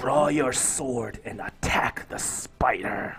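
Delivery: screeching, overwhelming voice. A game master voices a voice in a player's head, screeching and overwhelming. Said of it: "overwhelming voice in your head that just is screeching voice".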